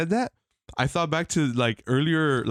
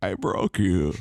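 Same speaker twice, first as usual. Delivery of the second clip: very low voice, dropped as deep as possible; 8 semitones lower than usual. Joking about feeling like a villain after winning: Bane voice. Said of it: "I feel like Bane".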